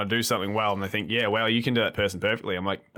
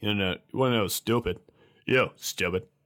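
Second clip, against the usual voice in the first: put-on deadpan sitcom character voice. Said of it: "Putty is like".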